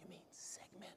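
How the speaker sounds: gentle, very soft, kind, hushed whisper. Retelling how a lady in the front corrected a word: imitating a whisper. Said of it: "whispered to me".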